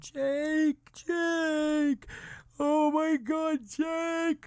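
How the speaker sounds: put-on crying. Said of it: "and I'm crying".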